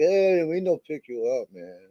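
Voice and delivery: bad put-on French accent. Retelling hitchhiking in French Canada, imitating locals refusing a ride, in a horrible French accent. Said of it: "that was a horrible French accent".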